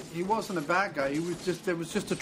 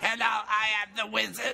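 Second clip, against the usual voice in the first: much higher cartoon voiceover voice; 4 semitones higher than usual. Speaker mocking a man's put-on voice as cartoon voiceover work. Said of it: "voiceovers for bad uh, Saturday morning cartoons".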